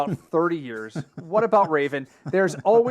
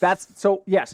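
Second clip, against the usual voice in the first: ordinary talk, nothing marked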